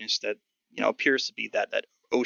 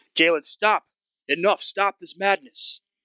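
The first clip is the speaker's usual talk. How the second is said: high-pitched, urgent, loud shouted yell; 8 semitones higher, 4 dB louder than usual. Game master voicing Gideon rushing forward toward Galen, Gideon yelling. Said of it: "he's yelling".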